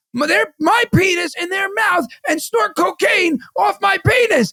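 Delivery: furious, very high, shrieking angry scream. Retelling a man's video, imitating him screaming like he's angry. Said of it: "he's screaming it like he's angry".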